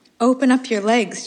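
playful teasing. A younger woman teases the narrator about the river, teasing. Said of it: "a younger woman was teasing me".

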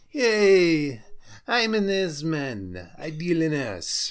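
put-on thick, vague European accent, loud and swooping. Retelling a man's comeback after being corrected, in Mr. Derringer's thick European accent. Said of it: "in his thick, vague European accent goes".

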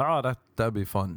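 plain

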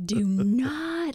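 high yelling scold with swinging pitch. Retelling how she yelled at the speaker in tight quarters, imitating someone yelling. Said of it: "she just yelled".

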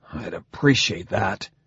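through gritted teeth. [name], in pain, answers Bhutan through gritted teeth. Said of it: "through gritted teeth".

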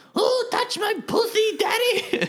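very high-pitched, sultry, seductive kitty voice. Telling a dream about someone's cat learning to talk: imitating the cat's voice. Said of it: "she would go".

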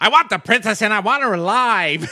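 very high, very loud, belted British delivery. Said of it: "In a British".

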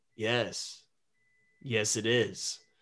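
soft, strange, eerie, uncanny, unsettling voice. Narrating a story, a voice answers a character from a dark storeroom: strange, eerie voice. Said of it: "A strange, eerie voice answered".

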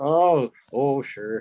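put-on Minnesota accent. Hearing about a harvest job in Moorhead, Minnesota, the listener answers in a put-on Minnesota accent. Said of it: "I start talking like them".

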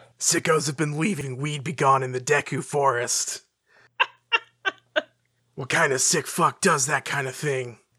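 weary, worn-out grumbling tone. Imagining Link's first voice-acted line at the milk bar bar: voicing Link. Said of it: "He holds two fingers up to the bartender and just goes".

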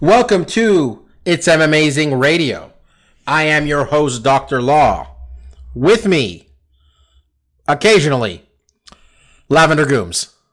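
choppy, halting, disjointed phrasing. Host opening the radio show and introducing the co-host, disjointed. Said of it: "Why are you sounding so disjointed?".

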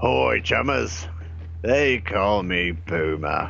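put-on Australian character voice. Introducing the character to the listeners, in Puma's Aussie voice. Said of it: "They call me [name]. Not sure if it's because I'm an Aussie or if it has something to do with my work. Nah. Anyway, my job's to either shoot Drek, chop it up, or break into it. You'd be surprised ... Not sure if it's because I'm an Aussie or if it has something to do with my work. Nah".

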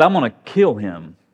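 mock-angry, furious delivery. Speaker retelling the story of Esau and Jacob, voicing Esau's threat: acting out an angry threat. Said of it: "He's so angry".

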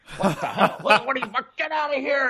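mock very high, shrill, loud yell, rising as it goes. Retelling a house seller's video, imitating someone yelling. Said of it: "And he yells".

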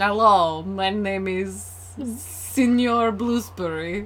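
slow, bad Russian accent. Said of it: "You sound Russian".

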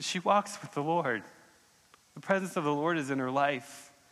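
tearful, emotion catching the voice, choking up. Speaker shares a story about a woman they appreciate, choking up, near tears. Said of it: "I'm going to cry because I can't talk about Jesus or her without crying".

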